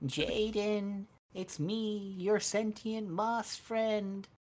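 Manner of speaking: high cartoon frog-puppet character voice. Imagining a dub where a moss character talks to Jaden: high Kermit-like voice. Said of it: "mix of a high-pitched voice with a Kermit kind of voice".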